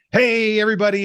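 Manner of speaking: bright, very high, peppy salesman host voice. Retelling hosting a shopping show for statues: imitating own peppy host voice. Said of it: "I had to be really peppy".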